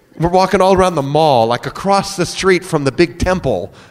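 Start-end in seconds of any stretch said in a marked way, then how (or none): none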